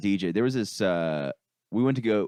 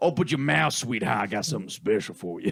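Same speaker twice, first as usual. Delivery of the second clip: put-on Creole-accented speech; 3 semitones higher than usual. Retelling the stir fry chef flirting: imitating a chef's thick Creole accent.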